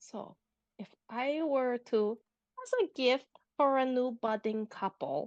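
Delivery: hushed voice. Voicing a character quietly asking a bartender about a gift: whispering. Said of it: "she just whispers to the bartender".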